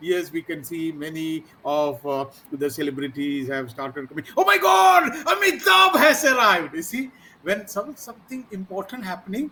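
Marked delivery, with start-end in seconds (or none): 4.4-6.7 very high, very loud, thrilled excited shouting. Announcing celebrities arriving, something important happening: excited raised voice. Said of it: "you will have an excitement in your voice".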